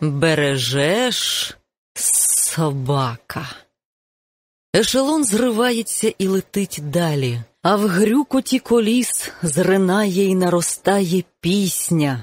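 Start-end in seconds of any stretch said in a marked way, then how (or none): 0.0-3.5 furious, gritted teeth, much lower. Narrator reads a character's line, furious, through gritted teeth. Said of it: "з пекельним гнівом цідить крізь зуби".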